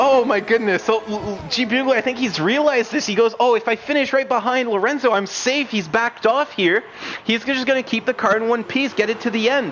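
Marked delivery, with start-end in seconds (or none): none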